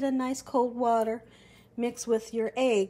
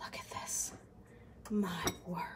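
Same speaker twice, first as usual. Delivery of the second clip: excited whisper, lower and quieter; 4 semitones lower, 12 dB quieter than usual. Showing the finished dish while sealing the crust: whispering excitedly.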